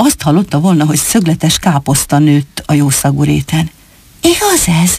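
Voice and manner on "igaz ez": eager, thrilled, high-pitched excited voice. A rabbit, told of a famous rabbit's shoes, asking excitedly. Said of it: "Kérdezte izgatottan".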